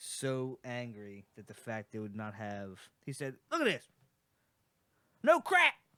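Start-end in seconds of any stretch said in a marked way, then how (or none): 3.5-5.7 put-on very high, very loud southern accent. Retelling an angry friend's complaint about missing seasoning: imitating Brody's southern accent. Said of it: "He got a southern accent".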